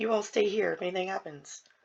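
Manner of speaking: quiet, hushed half-whisper. Voicing a character getting off a horse, telling the others to stay: half-whispering in character. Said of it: "whisper as I'm".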